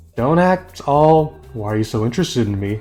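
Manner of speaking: ordinary talk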